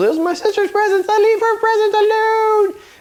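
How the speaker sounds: put-on very high, fast little boy voice. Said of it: "the little brother comes".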